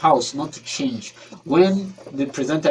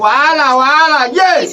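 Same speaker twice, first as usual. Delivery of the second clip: full-volume shrill, very high shout; 12 semitones higher, 10 dB louder than usual. Demonstrating how to shout during a performance, shouting. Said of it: "you need to shout like".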